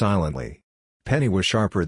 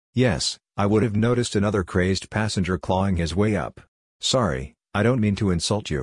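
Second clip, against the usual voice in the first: ordinary delivery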